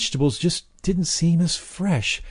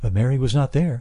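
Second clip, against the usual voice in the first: usual speaking voice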